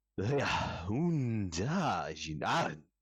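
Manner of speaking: giant-language call with "unda" stretched out. Voicing a giant speaking out in Giant to the party: speaking in Giant. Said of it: "speaking out in Giant".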